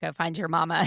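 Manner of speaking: plain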